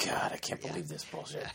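whispered, hushed, breathy grumbling mutter. Acting out how they ramp it up, imitating a muttered complaint. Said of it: "they'll do the mutter under their breath".

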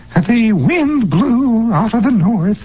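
put-on very high, quavery, cracked old-lady schoolmistress voice. Describing how a woman began reading aloud: cracked old lady teacher voice. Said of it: "this cracked old lady English teacher voice. You know, the kind that says".

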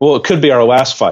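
put-on deadpan delivery, stern and cold. Recapping a scene, speaker acts out the man answering the woman, mock-deadpan, stern and cold. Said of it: "he hits her pretty deadpan with".

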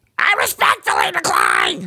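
shrill, loud, high, swooping, belted out. Showing another speaker how a Gilbert Gottfried voice goes. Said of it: "No, it goes like this".

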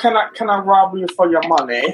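put-on polite British accent. Acting out a British person robbing someone: mock polite British robber. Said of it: "in the most polite way ever".

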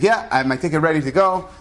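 ordinary talk

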